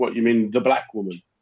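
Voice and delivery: ordinary talk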